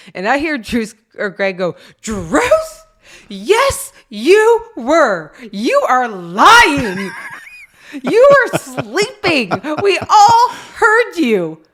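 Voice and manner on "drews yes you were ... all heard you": very slow, swooping, high, drawn-out raised voice. Retelling how someone in the car accused Drews of sleeping, retelling a raised voice. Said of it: "Greg's raises his voice".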